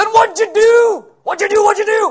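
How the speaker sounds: very high, loud drill-sergeant bark. Picturing John out there questioning someone, John as drill sergeant. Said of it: "like a freshman football coach or a drill sergeant".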